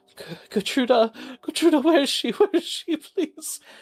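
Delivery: tearful, shocked, crying voice. Voicing a crying woman at her door asking where someone is: tearful shocked pleading. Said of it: "with tears on her face and shock".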